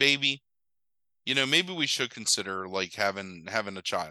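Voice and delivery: ordinary talk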